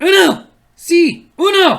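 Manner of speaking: loud, high-pitched shout.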